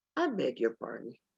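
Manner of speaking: very soft-spoken, quiet, gentle voice. Showing a favorite line for calling someone out, in a very soft voice. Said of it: "in a very soft voice say".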